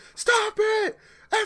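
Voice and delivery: shrill, very high, loud, panicked scream. Retelling how the listener freaked out while driving, imitating someone screaming. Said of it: "You started screaming".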